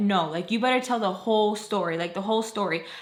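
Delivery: ordinary delivery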